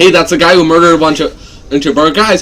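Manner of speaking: usual speaking voice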